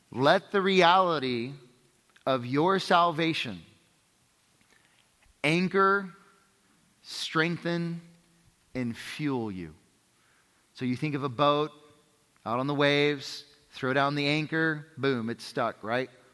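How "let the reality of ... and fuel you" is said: slow, word-by-word dictation pace. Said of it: "I'll talk slowly".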